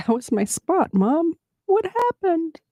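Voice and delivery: very high, mopey, sad puppy voice. Voicing a sad dog whose spot was taken: voicing sad Xena. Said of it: "Look at how sad Xena looks".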